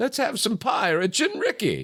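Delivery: high chirpy voice with big pitch swoops. Speaker, making fun of Jen, does an Aunt Bee voice. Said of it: "I used to do an Aunt Bee voice".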